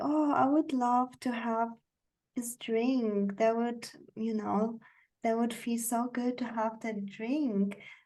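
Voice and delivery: slow, unhurried, soft, gentle voice. Showing a softer way of ordering something: slow, gentle, soft speech. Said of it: "hear how I speak slower and more gently and softer".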